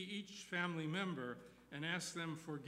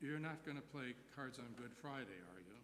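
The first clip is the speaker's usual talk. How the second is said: put-on kindly gentle tone, quieter; 4 semitones lower, 8 dB quieter than usual. Speaker quoting his grandpa questioning him over playing cards, imitating a kindly voice. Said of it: "asked in a kindly voice".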